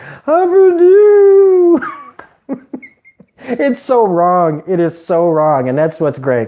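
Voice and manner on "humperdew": very high, loud hillbilly voice. Praising the show Preacher, quoting the character in a Humperdew hillbilly voice. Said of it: "that's another great voice".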